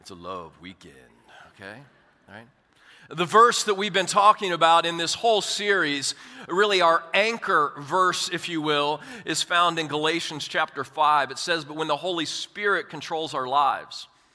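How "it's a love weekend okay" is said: deliberately dropped, very low, very soft hush. Addressing listeners mid-talk, showing off a deliberately lower voice. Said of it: "You see how my voice got lower like that?".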